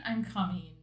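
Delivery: hushed stage whisper, near half-whisper. Retelling what someone said during an intimate moment: imitating a half-whisper. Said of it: "and then they whisper".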